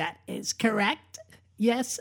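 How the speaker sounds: put-on tiny, innocent, very soft, slow Valley girl voice. Describing a young woman coached to sound innocent: squeaky Valley girl voice. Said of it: "a little squeaky voice going".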